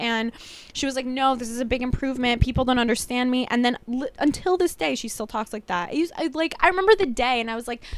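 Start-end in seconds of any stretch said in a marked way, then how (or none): none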